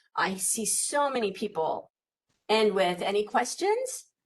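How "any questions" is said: unsure pitch rise at the ends of phrases. Giving presentation advice, imitating people ending with rising pitch on questions. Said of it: "That's like your voice is going up. You sound unsure of yourself".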